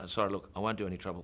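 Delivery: ordinary delivery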